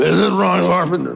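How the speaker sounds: very gruff, rough-edged, grinding voice. Retelling a phone call he answered, doing the caller's very gruff voice. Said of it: "That's exactly the way it sounded".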